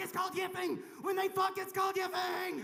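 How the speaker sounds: acted-out, eager, bursting can't-wait blurt. Retelling how Gabourey Sidibe jumped in: imitating Gabourey Sidibe, eager. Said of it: "she couldn't fucking wait".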